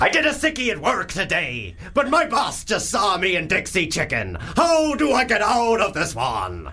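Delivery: high, swooping sailor character voice. Improvising a seafarer character getting ready for a storm, Seafarer Malk character voice. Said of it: "Seafarer in a a storm is coming".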